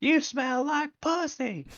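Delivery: put-on very high, drawn-out little-kid screaming voice. Retelling a movie scene of kids swearing: imitating a screaming six-year-old. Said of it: "what looks like a six-year-old screaming".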